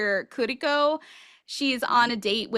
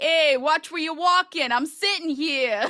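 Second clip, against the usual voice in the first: fake New York street accent; 4 semitones higher than usual. Imagining telling off sentient talking dust: put-on New York accent. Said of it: "I'd probably give them one of the New York like".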